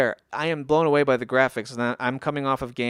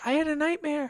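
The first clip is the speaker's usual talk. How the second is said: put-on tiny, very high little child voice; 3 dB quieter than usual. Retelling what he said crawling into bed at three in the morning, little high-pitched voice. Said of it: "because of his little high pitched voice".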